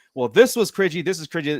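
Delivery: ordinary delivery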